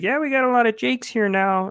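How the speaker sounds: odd, high puppet voice, sliding up in pitch. Retelling what a coworker said to him: weird Kermit the Frog voice. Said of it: "this kinda weird Kermit the Frog voice".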